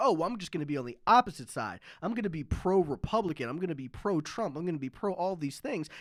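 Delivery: ordinary delivery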